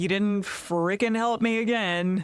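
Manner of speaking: slow, super passive-aggressive, guilt-tripping jab.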